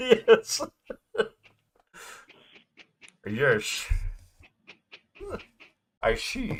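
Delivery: bad, weak Scottish accent, very high and slow. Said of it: "I'm not good with a Scottish accent".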